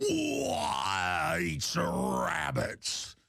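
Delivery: rough, very slow, drawn-out cartoon voice. Retelling how a wrestling manager talks: Yosemite Sam voice. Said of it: "his manager has a Yosemite Sam voice".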